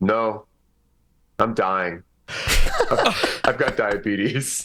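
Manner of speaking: mock grave, solemn, very slow and drawn out, swooping. Retelling a story where an older man answers an ice cream offer: imitating someone speaking solemnly. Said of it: "very, like, solemnly, he goes".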